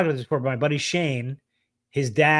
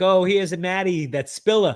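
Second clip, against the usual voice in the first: put-on Brooklyn accent, higher; 5 semitones higher, 3 dB louder than usual. Imitating the other speaker's grandma calling him the spiller: put-on Brooklyn accent. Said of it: "a Brooklyn accent".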